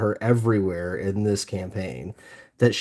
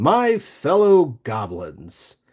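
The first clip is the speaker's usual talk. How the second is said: play-acted, grand, loud, swooping proclamation; 4 semitones higher, 4 dB louder than usual. Parent retelling what their daughter's character told the goblins, retelling a loud proclamation. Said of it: "she proclaims in a loud voice".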